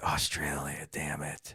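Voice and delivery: low, soft mumble under the breath. Retelling how a wife reacts to the news: imitating wife mumbling under breath. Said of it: "mumble under her breath".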